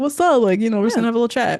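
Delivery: mock willy-nilly, breezy, carefree delivery. Recapping a show where Patrick comes to chat with her: imitating Patrick, willy-nilly. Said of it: "He's all willy-nilly".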